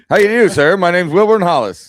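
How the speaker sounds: put-on rapid, loud fifties old-Hollywood movie fast-talk. Two speakers riffing on old movies, showing how fifties movie men talked: fast-talking fifties movie voice. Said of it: "the guys all talk really fast".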